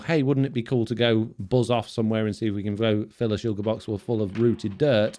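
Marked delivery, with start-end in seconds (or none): none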